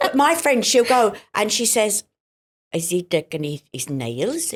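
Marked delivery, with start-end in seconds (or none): 2.7-4.5 soft put-on Swedish accent. Quoting a friend's question, in a swedish accent. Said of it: "Great accent there".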